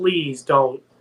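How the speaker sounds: mock crying, pleading. Retelling a scene where Ben stops and pleads: imitating Ben crying. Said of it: "he starts crying".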